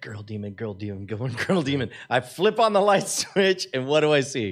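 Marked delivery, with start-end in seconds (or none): 0.0-1.9 acted-out mutter, lower, quieter, faster. Retelling walking into a room, the speaker acts out muttering under their breath. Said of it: "you hear me muttering under my breath".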